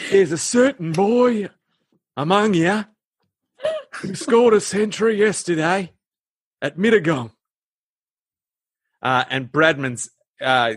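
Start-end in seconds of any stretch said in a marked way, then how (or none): 0.1-7.3 laid-on, put-on Australian accent, pitched up. Doing variations on a voice, performing an Australian Dumbledore voice. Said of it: "I've got to do an Australian Dumbledore".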